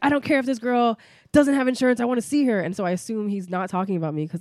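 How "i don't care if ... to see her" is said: high, loud, demanding yell from the background. Retelling what a man yelled in the background at a hematologist's office, imitating a yell. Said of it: "he's yelling in the background and he's like".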